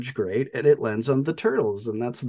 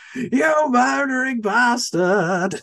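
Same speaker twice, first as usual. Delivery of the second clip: put-on scream, higher and louder; 12 semitones higher, 4 dB louder than usual. Retelling a scene where a character screams at the sky: imitating someone screaming. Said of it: "he's just screaming at the sky".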